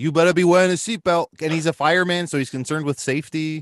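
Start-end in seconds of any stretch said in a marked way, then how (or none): 0.0-1.3 put-on loud New York accent. Imagine how a fireman concerned with safety would say it, in [name]'s New York accent. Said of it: "in that beautiful New York accent".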